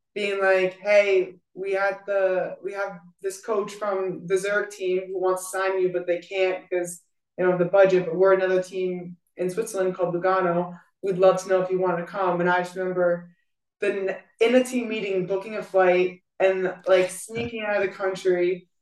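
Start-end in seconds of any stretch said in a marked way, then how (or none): none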